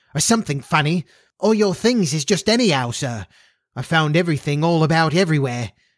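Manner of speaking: flustered, out-of-breath, excited outburst. A flustered housekeeper meets her employer halfway down, crying out excitedly. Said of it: "he met his housekeeper, Miss [name]. She was flustered and excited, / She was flustered and excited, / he met his housekeeper, / she cried excitedly, ... she explained breathlessly. / she explained br".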